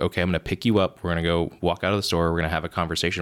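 ordinary talk

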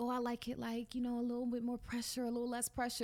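faux-seductive, put-on sexy bedroom voice. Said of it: "We have to say it in a sexy way".

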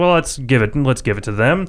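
ordinary delivery

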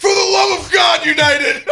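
very high, very loud yell. Retelling a guy on the plane waiting for takeoff, retelling a loud shout. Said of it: "this guy goes real loud".

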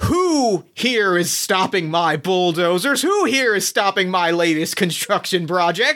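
angry, demanding, scowling bully voice. Voicing Boss Rat confronting the crowd: scowling. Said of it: "with a big scowl on his face says".

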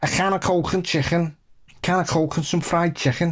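Liverpool Scouse accent. Showing how to do a Scouse accent: Scouse accent. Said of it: "how to do a Scouse accent".

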